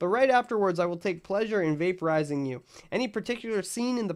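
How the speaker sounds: plain reading voice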